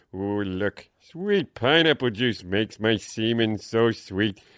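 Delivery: deep put-on cartoon voice. Asked to do Homer Simpson, the speaker performs a line in Homer Simpson voice. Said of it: "Homer Simpson. He goes".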